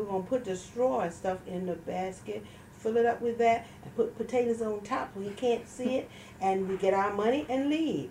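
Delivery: ordinary talk, nothing marked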